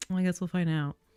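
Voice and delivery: imitated passive-aggressive tone. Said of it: "going passive aggressively".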